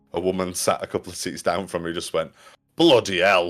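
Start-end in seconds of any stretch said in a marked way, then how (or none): 2.7-3.5 put-on thick East Lancashire accent, exclaimed. Retelling what a woman in the cinema exclaimed: imitating a broad East Lancs accent. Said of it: "in a very broad East Lancs accent".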